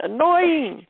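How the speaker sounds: put-on high-pitched New Jersey accent. Recalling someone's favorite word, said in a jersey accent. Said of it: "You said it with a Jersey accent".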